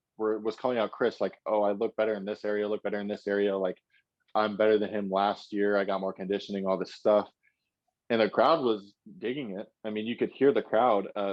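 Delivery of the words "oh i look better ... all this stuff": ordinary talk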